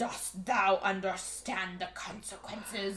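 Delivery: super spooky, creepy, eerie, ghostly voice. Retelling what he said to her at school: super spooky voice. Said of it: "like super spooky voice".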